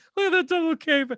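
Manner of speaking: squealing, giggly, very high voice. Retelling a JoJo scene where Stroheim mocks a fall: imitating Stroheim giggling. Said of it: "losing his mind, giggling and laughing".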